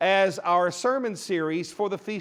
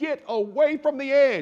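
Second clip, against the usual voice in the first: high, drawn-out, commanding scream; 6 semitones higher than usual. Retelling warning tourists at the canyon edge: imitating himself screaming. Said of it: "I'm screaming at everybody".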